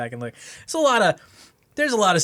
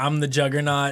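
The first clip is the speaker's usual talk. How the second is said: ordinary delivery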